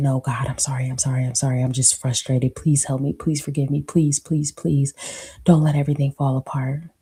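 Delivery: pleading, begging tone. Retelling one's own past prayer to God: retelling own begging plea. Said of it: "begging something silent to stop it".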